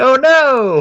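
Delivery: acted, very high, little panicked cry. Retelling Grandpa sliding across the ice, unable to stop, mock-panicked 'oh no' cry. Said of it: "He's just like".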